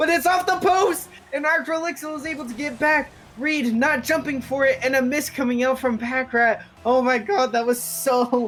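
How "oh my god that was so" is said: voice breaking mid-phrase, cracking and drawn out. A commentator reacts to a missed opportunity in the game, voice cracking. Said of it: "My voice cracked there".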